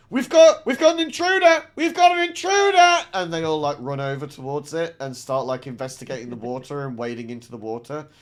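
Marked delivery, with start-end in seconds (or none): 0.1-3.0 very high, very loud, shrill, alarmed shout. A game master voices a character pointing at ripples in the water, shouting an alarm. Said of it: "starts shouting".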